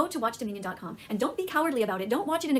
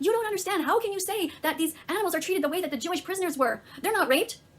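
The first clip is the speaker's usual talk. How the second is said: put-on yell, higher; 7 semitones higher than usual. Retelling what a girl said to a camera: imitating someone yelling. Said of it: "this one girl yelling at the camera".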